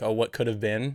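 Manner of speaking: plain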